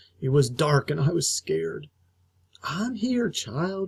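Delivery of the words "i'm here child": put-on softly spoken, pitched-up grandmother voice. Narrator reads Grandma calling to the child from the doorway, soft. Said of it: "Grandma said softly".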